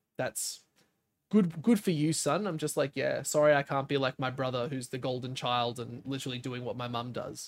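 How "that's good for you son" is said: slow, annoyed, disapproving mom voice. Speaker retells how his mom reacts to what he does; imitating a pissed-off mom. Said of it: "And she just gets pissed".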